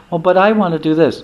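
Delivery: tiny, small, high-pitched squeaky little voice. Acting out the Atma answering the determined mind: little squeaky voice. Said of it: "the little squeaky voice of the Atma says".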